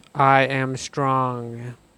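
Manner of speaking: confident, steady, strong, firm delivery. Voice exercise on speaking strongly, practice line, strong. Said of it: "let's try speaking strongly".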